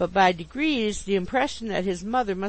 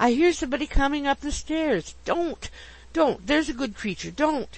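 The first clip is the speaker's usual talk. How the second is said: struggling violently, pleading, much higher; 6 semitones higher than usual. Narrator reads a man's words as a woman clings to him, struggling violently. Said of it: "struggling violently".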